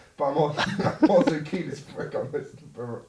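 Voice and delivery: words broken up by laughing and giggles.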